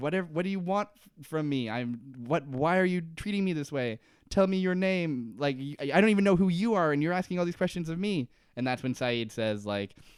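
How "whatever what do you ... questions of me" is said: mock crying, desperate, high and tearful. Retelling a TV scene where a prisoner begs his questioner: imitating someone pleading and crying. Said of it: "Henry's, like, like, pleading, and he's, like, crying".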